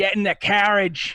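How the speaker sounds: put-on high, loud Boston accent. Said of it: "he speaks in a, uh, a Bostonian accent".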